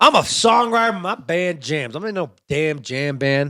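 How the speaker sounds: sudden put-on Southern accent. Talking about jam bands, suddenly slipping into a put-on southern accent. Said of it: "I all of a sudden get a southern accent".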